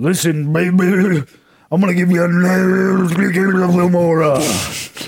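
put-on ghoulish drawl. Imagining how a man he's never heard speak talks: put-on ghoulish voice. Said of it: "I imagine he talks like this".

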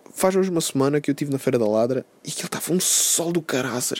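ordinary talk, nothing marked

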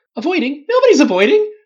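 shrill, very high, very loud outburst. Tony answers Rhodey's question about avoiding someone, shrill voice. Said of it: "His voice came out shrill".

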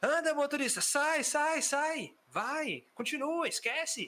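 put-on urgent, very high-pitched, shrill shouting. Retelling a fight by a bus as the women shout at the driver, imitating women yelling. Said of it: "as mulheres gritando".

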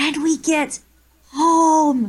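theatrical whisper. Planning a scene, the speaker demonstrates the line as a stage whisper. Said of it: "I'll do a stage whisper".

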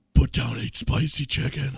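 put-on wheezy strained voice. Acting out ordering at a drive-thru with a lost voice: wheezing Batman-like lost voice. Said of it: "It's just a wheeze".

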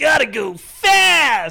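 shrill, very high scream, fast, drawn out. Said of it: "He just fucking screamed it".

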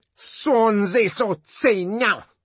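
ferocious jeer, very high and very loud. The savage adds a last outburst in Zuni, with derisive ferocity. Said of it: "with what derisive ferocity".

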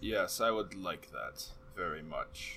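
low, hushed dark-elf character voice. A game master voices a drow elf offered a severed head, drow elf voice.

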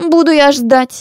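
with a snort. Narrator reads a young woman refused a donkey ride, snorted retort. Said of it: "фыркнула девица".

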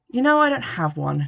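ordinary delivery

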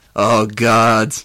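groaning. Narrating Johnny's words in the mirror image, moaning. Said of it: "he moaned".

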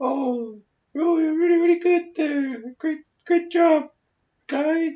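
very high, squeaky put-on voice. Show the other speaker how you make up their half in your head, imitating the other speaker's voice. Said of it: "And that's your voice, obviously".

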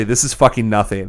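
plain

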